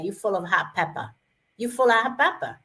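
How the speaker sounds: put-on, imitated Spanish accent. Quoting their dad's saying the way he said it, Spanish accent. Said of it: "it's a Spanish accent".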